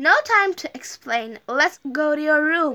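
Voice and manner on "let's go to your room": plain reading voice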